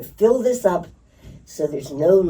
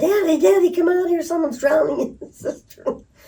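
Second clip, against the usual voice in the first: frantic, panicked shriek, pitched way up; 12 semitones higher than usual. Retelling shouting for a father after a child fell in: retelling a panicked scream. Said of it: "I went screaming".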